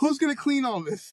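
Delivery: play-acted, shrill, very high-pitched scream. Imagining her mother's reaction to a ten-bathroom home; imitating mother screaming. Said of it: "I can hear her screaming right now".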